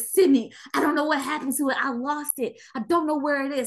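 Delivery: frantic, panicked, tearful voice, crying. Retelling what a panicking brother said to their mother: imitating a panicking, crying brother.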